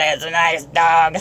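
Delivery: deep, very gravelly, rough rasping woman's voice. Retelling what a woman said about their dog: imitating a very gravelly voice. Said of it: "the most gravelly voice I ever heard".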